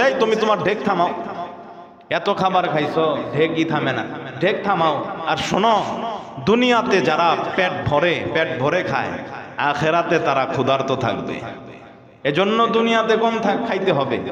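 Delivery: normal talking voice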